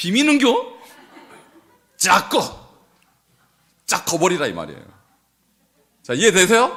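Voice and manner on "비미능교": very high, lilting Gyeongsang dialect accent. Pointing out that a word sounds like dialect: Gyeongsang dialect accent. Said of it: "약간 경상도 사투리 같지 않아요?".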